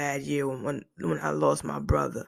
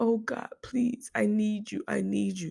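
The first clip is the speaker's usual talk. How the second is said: delicate, dainty, high-pitched pleading tone; 6 semitones higher, 4 dB quieter than usual. Acting out how the prayer for help did not sound: mock dainty pleading. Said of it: "all dainty and, and sitting somewhere like".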